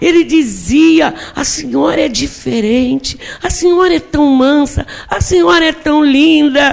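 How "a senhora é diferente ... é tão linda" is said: very slow, dazed, foggy, dragged-out speech. A woman retells what a young man, confused from drugs, said to her, retelling very slow speech. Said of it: "falando muito devagar".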